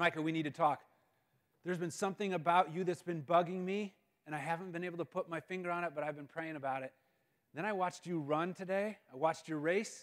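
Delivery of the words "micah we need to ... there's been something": usual speaking voice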